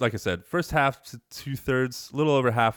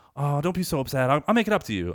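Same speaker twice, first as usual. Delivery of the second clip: mock-upbeat bubbly voice, much higher pitch; 3 semitones higher than usual. Retelling a character's reply to an upset kid, imitating an upbeat voice. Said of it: "she's like this like, I'm upbeat".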